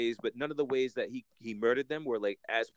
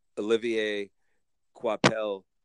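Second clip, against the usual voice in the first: put-on French accent with raised pitch; 5 dB louder than usual. Reviewing a comic book, saying the artist's name in put-on French accent. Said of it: "I'm gonna pronounce this as if I'm French".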